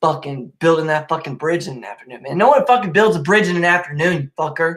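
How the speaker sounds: increasingly upset, agitated, worked-up delivery. Speaker rants to a listener about people who yawn, getting upset. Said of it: "Sorry, I'm getting upset".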